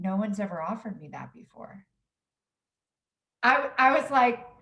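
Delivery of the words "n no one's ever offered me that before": low, quiet, subdued, stammering, halting voice. Retelling a client's reply to a pie offer: imitating a low quiet voice. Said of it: "his voice got really low and quiet".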